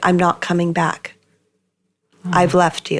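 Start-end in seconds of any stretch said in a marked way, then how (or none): 0.0-1.1 quiet, calm delivery. Recounting a phone call with him, the speaker repeats their words: retelling a quiet, calm statement. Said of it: "very quietly and calmly stated".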